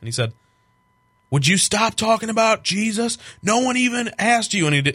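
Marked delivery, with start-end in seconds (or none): 1.3-4.7 angry, fed-up, high, raised shout. Retelling what a good friend yelled outside: imitating a friend yelling. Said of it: "yelled at me".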